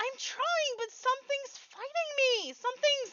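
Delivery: very high, loud calling shout. The narrator voices a character answering from the crow's nest, shouting down. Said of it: "she shouts down from the crow's nest".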